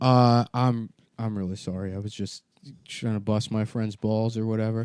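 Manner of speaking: ordinary talk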